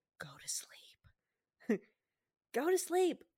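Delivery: hushed, very slow, drawn-out whisper. Retelling how a hunter spoke to a moose he killed: imitating Jordan whispering. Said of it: "and he's whispering".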